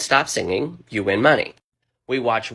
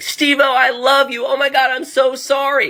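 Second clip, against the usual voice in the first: very high, loud, shrieking fan scream; 5 dB louder than usual. Retelling what an injured fan screamed at a star: imitating someone screaming. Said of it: "she was screaming, like".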